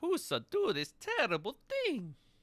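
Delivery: very high, goofy, swooping creature voice. A figure knocked prone against the alley wall speaks, in a Jar Jar Binks voice. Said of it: "You sound like Jar Jar Binks now".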